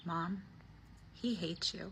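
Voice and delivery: slow, drawn-out half-whisper, all breath. Retelling what a son half-whispered to his mom: imitating a half-whisper. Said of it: "he whispers".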